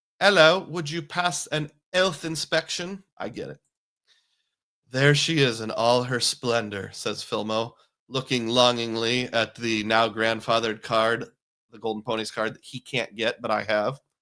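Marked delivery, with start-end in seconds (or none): 0.2-3.0 bad put-on British accent, h dropped. Speaker tries a line in a UK accent after a comment, terrible British accent. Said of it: "here's my terrible accent".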